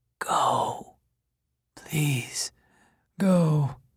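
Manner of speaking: weak, faint, dreadful-sounding voice. Begging an insistent visitor to leave, in a faint and terrible voice. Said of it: "in his faint and terrible voice".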